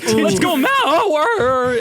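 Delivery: voice breaking mid-cheer, very high and loud. Retelling a loud cheer at the game at age twelve: imitating a voice crack. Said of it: "my voice cracked".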